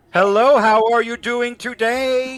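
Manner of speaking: stiff fake English accent, very high and very loud. Advising French speakers faking English, the speaker demonstrates Sofia Vergara's stiff English accent. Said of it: "try to pass off an English accent".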